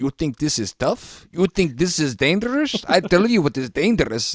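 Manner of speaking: heavy Russian or Ukrainian accent. Advising how to sound tough somewhere risky, thick Russian-type accent. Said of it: "thick like Russian or uh, or Ukrainian type of accent".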